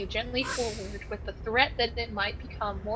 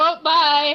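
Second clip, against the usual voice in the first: delighted, gleeful, high, very loud, cheery; 5 semitones higher, 11 dB louder than usual. Imitating a character's goodbye after being called happy: imitating Gretchen sounding happy. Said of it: "Gretchen sounded so happy to be rid of me".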